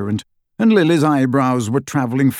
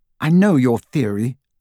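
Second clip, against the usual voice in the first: cold, icy tone. Narrator reading a character's reply in an argument: cold. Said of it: "and she sounded cold".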